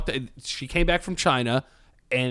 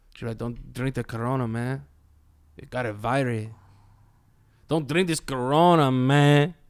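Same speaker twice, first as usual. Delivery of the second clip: put-on Mexican accent, slower. Imitating the guys who hang out at his deli: Mexican accent. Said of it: "I heard you doing like a Mexican accent".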